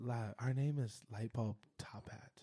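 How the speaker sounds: clueless and dazed, very low and very quiet. Showing the others how to say the group's name, like barely knowing your own name. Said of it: "say it like you barely know your name".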